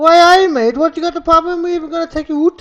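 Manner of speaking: shrill, very high, loud put-on woman's voice. Playing the woman in an improvised bit, in a put-on woman's voice. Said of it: "I like to play the woman".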